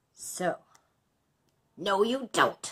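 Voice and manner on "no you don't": booming, loud, sputtering, spluttering dragon bellow. Reading a fairy tale aloud, voicing the dragon: spluttering dragon voice. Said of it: "said the dragon in a spluttering voice like a damp squib".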